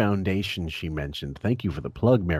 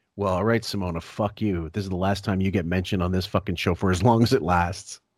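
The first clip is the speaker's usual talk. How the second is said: usual speaking voice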